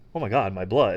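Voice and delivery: acted-out dismayed, shocked tone. Retelling a movie scene, acting out Clark's shock at bleeding. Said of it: "he just is like".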